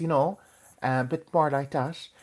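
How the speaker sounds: rural west-of-Ireland country Irish accent, high-pitched. Explaining Irish regional accents, showing how people further west talk: country Irish accent. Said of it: "they'd be talking like this".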